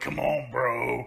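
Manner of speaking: put-on, deep, grunted voice. Retelling a wrestling crowd brawl, imitating a deep grunted voice. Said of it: "the deep grunted voice".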